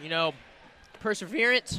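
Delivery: voice breaks on the word "perseverance". Calling the game play-by-play, voice cracking. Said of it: "Oh, voice crack".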